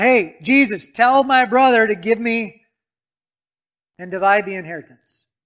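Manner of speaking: loud yelling voice.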